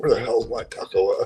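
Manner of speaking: wild, ranting, complaining voice. Retelling complaining to the wife: imitating own wild-man complaining. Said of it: "like a wild man complaining to the wife".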